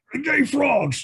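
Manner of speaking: very high blurt, ranting like a host. Having just remarked on sounding like your own Alex Jones impression, do an Alex Jones impression. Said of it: "that does sound like my Alex Jones impression".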